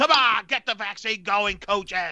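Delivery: put-on mocking troll voice. Mocking the coaching staff after a vaccine comment: put-on troll voice. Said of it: "the troll voice".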